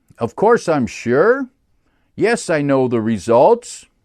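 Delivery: rising uptalk at the end of each sentence. Showing statements that sound like questions: statements ending with rising inflection. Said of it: "do you end with inflection so that you make it sound like a question?".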